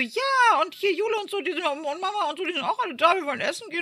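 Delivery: flustered high gush.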